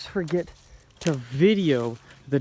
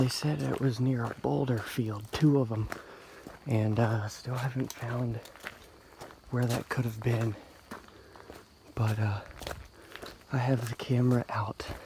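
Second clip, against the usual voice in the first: hushed whispering, much quieter; 3 semitones lower, 7 dB quieter than usual. On a hiking trail with the camera out, whispering. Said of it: "so I'm whispering".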